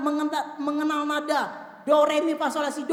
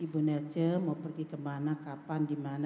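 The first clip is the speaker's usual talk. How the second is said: flat monotone on one note throughout; 12 semitones lower, 10 dB quieter than usual. Showing how nobody really speaks without intonation: monotone, one unchanging note. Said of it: "Nadanya satu aja, terus do gitu".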